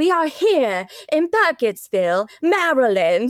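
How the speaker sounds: put-on obnoxious mid-Atlantic accent, laid on thick. Recapping how Heather does her narration, imitating Heather's obnoxious mid-Atlantic accent. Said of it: "the most obnoxious, like mid-Atlantic accent going on".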